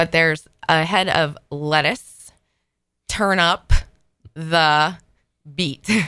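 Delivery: slow, deliberate delivery broken up mid-phrase. Speaker describing a T-shirt joke to another speaker, said slowly. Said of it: "I'm going to say it slowly".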